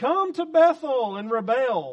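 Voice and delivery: very loud, swooping, mocking, ironic sarcasm. Reading God's words through Amos aloud in a sarcastic tone. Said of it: "I'm going to use a sarcastic tone because I think we're supposed to".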